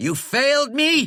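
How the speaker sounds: high, loud furious snarl, voice shooting very high. Reading a story aloud, Flannery confronts the creature Nye, snarling. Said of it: "he snarled".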